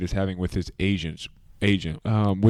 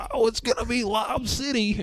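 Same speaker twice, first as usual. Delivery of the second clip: high, mocking hype-man squeal. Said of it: "mocking how crazy everybody was gonna go".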